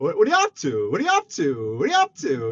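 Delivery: put-on swooping talking-parrot voice with an accent. Retelling how James's parrot keeps asking a question, as a parrot talking in James's accent. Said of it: "It says it in James's accent".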